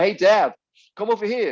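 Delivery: put-on American accent. Retelling what Krista called out: imitating Krista's American accent. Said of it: "'cause she's American and that's how she sounded".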